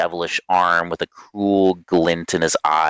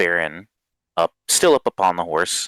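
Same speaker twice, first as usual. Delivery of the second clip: ordinary delivery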